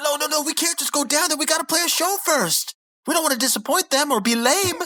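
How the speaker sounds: begging, pleading in a very high-pitched voice. Recapping the concert scene for a co-host, acting out Muscle Man mock-pleading. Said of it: "So Muscle Man's pleading".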